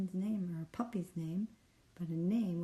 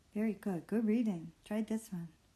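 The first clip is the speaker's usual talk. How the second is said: ordinary talk, nothing marked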